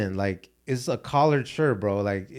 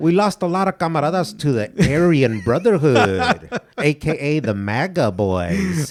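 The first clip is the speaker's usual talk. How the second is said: put-on street voice, louder; 2 semitones higher, 7 dB louder than usual.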